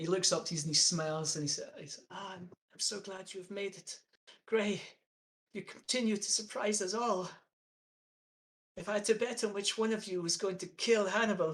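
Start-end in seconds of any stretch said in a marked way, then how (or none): 2.1-11.5 put-on elderly man's aged voice. Narrating a scene, voicing a man under blankets who smiles up and greets you: old man voice. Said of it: "speaks with an old man voice".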